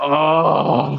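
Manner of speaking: rough, creaky, pained moan and groan. Retelling a friend's answer after drinking the bottle: imitating a groan of stomach ache. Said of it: "like he had a stomach ache".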